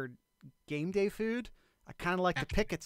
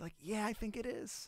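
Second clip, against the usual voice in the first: timid, meek, small, soft voice; 4 semitones higher, 9 dB quieter than usual. Showing how they'd answer yes while not quite sold, in a meek voice. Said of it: "I'm saying it with like a little bit of a meek voice".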